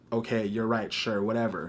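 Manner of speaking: usual speaking voice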